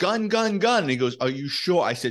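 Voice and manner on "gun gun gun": very high, shrill, loud screaming. Retelling wrestling a man for a gun, screaming for his partner. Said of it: "I'm screaming for my partner".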